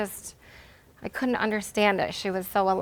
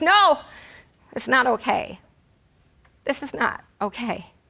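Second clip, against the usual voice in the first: acted firm, unyielding stern voice, loud and deliberate; 4 semitones higher, 5 dB louder than usual. Retelling a reply to a pediatrician: retelling own stern loud voice. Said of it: "I said in a stern, loud voice".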